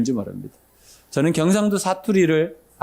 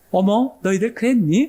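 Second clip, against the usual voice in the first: put-on Seoul-style speech, pitched up; 6 semitones higher than usual. Speaker recalls how Seoul speech used to sound to them, imitating Seoul dialect. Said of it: "이렇게 이렇게 들렸던 그 서울 사투리가".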